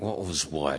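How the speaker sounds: very quiet, low, exasperated, frustrated mutter. Retelling a reply to someone asking what just happened, in a mock-frustrated voice. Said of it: "It's in that frustrated voice".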